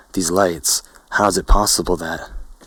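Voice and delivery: plain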